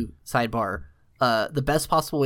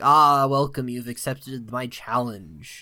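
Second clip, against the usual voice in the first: put-on ominous, solemn shrine monk voice. Describing arriving on the beach at Eventide Island, imitating the ominous shrine monk voice. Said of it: "ominous, like, shrine monk voice talking at you".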